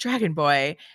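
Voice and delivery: put-on laconic young woman voice. Showing how the character Rose says a line: Rose voice, laconic. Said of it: "I could hear Rose saying".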